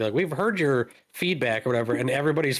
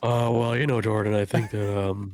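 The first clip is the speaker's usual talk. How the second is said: put-on chill guy voice, lower pitch; 3 semitones lower than usual. Answering what he thinks when put on the spot: Andy impression. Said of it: "your best Andy impression".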